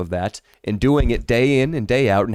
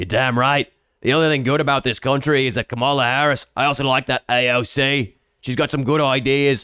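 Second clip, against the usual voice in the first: put-on Australian accent all the way through. Messing with a woman alongside friends, the speaker answers her in an Australian accent. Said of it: "I start speaking in an Australian accent".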